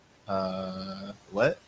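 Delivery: ordinary talk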